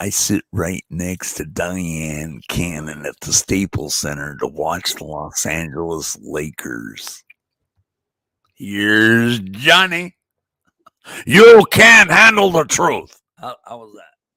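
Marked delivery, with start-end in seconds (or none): 0.0-13.2 deep, raised, slow drawl. Asked about voices, the speaker announces and performs a Jack Nicholson impression. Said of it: "This is Jack".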